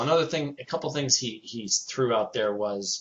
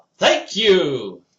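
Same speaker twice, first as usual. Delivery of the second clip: very loud, raised, high-pitched yell; 6 semitones higher, 10 dB louder than usual. Retelling calling out to an actor on stage: retelling a yell. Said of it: "And I yell".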